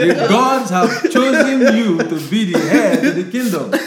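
very loud, high-pitched, slow, booming delivery. Acting out a Nigerian movie scene where a god picks the king: voicing Amadioha. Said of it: "Amadioha go decide, say".

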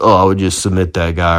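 ordinary talk

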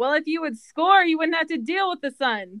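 high-pitched shouting. Retelling a reply yelled back to a player: retelling one's own yell. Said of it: "I just yelled back".

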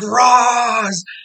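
long, high, loud, drawn-out scream. Recounting a scene where Batman runs into the tent; retelling a scream. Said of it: "he just screams".

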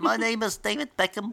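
high, mocking impression voice.

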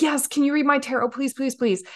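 eager, gushing pleading. Retelling a woman at a tarot reading at the register: imitating an excited woman. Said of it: "was so excited".

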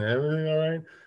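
mock half-asleep voice. Retelling his wife's words when she was asleep: imitating half-asleep wife. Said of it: "asleep saying".

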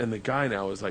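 ordinary delivery

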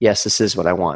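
timid, feeble, meek, weak voice. Retelling an answer given in that moment: imitating own meek, weak voice. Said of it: "a very meek and weak voice that said".

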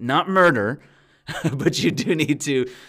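loud, amused, laughing aside.

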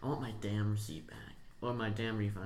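ordinary talk

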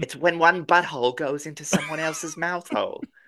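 put-on slight Australian accent. Speaking to Dexter: slight Australian accent. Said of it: "That was a little Australian".

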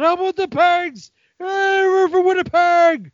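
very high, loud shout. Imagining guys drinking at a table naming a team: imitating someone yelling. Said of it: "somebody just yelled".

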